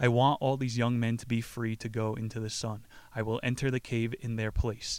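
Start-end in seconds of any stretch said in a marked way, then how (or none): none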